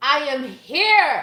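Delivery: very loud, high-pitched yell. Reading a card aloud that says to speak out loud: yelling. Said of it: "I don't know why I had to yell that".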